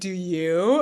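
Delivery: mock pointed, threatening tone full of menace. Retelling a character's comeback in a scene: imitating a threatening tone. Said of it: "this threatening way".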